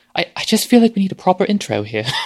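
put-on British accent. Showing how saying "a proper intro" sounds: put-on british accent. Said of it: "just saying the phrase sounds British".

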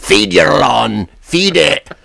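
put-on drawled Scottish accent. Asking an Irish conversation partner about a fertilizer ad, Scotts ad Scotsman accent. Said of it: "with this kind of generic Scotsman".

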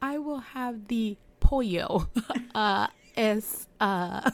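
mock halting Spanish, stressing familiar words. Imitating someone ordering food in struggling Spanish, stressing known words. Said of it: "I always put the emphasis on the words I know".

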